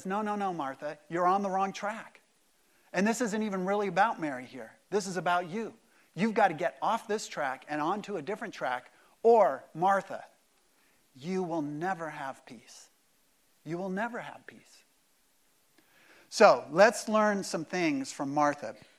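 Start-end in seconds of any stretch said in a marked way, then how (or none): 0.0-14.6 mock kindly, soft, steady, gentle but firm tone. Retelling a correction given to martha: imitating a gentle but firm rebuke. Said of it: "actually in a fairly gentle way, but in a firm way".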